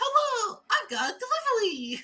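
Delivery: put-on tiny, squeaky, very high-pitched baby voice. Voicing a little baby delivery boy greeting the party: little baby newspaper boy voice. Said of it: "little baby pops out and goes".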